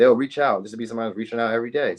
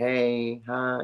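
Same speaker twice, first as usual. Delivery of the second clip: put-on gentle tender voice, quieter; 5 dB quieter than usual. Describing how others talk to you, imitating a tender voice. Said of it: "Like tender, tender".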